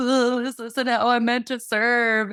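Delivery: loud, tearful, play-acted crying. Retelling calling mom about the job: imitating own past crying. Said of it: "I would call my mom crying like".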